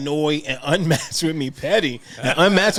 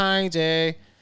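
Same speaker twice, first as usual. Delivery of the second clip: imitated drunk-sounding voice; 4 dB quieter than usual. Retelling greeting a boy who said her name: imitating a drunk voice. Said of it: "I drunkenly say".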